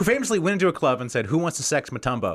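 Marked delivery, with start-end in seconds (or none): none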